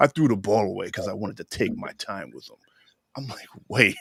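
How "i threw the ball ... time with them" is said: mock-sinister mustache-twirling villain voice. Retelling a man's words from an episode: mimicking a sinister villain voice. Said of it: "his voice sounds so sinister".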